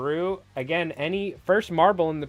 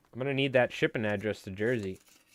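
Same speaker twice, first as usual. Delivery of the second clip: ordinary talk, nothing marked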